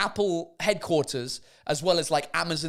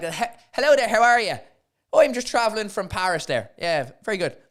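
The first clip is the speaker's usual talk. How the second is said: botched put-on Irish accent, high and loud; 5 semitones higher, 5 dB louder than usual. Acting out talking at the Irish border, in a bad Irish accent. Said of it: "I almost put an accent on at the border".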